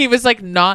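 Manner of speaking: ordinary talk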